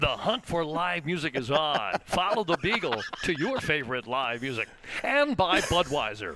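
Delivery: slick radio commercial announcer ad-read delivery. A podcast host reads the sponsor message: radio ad voice. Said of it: "you have a specific ad radio voice".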